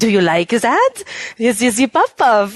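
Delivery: fake, laid-on, put-on French accent. Retelling a game scene, voicing the girl at the parlor: put-on french accent. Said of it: "the French accent thing going on".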